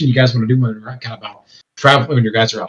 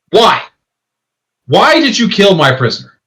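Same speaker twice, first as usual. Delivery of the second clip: big, booming, high-pitched voice; 8 semitones higher, 4 dB louder than usual. Voicing a woman whose voice booms through the forest, booming voice. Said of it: "her voice booms throughout the forest".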